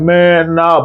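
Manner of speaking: slow, stretched-out, dragging, drawn-out delivery. Retelling how a man answered when accused of breaking into the house, said slowly. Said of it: "like saying it slow".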